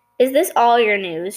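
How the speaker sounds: ordinary delivery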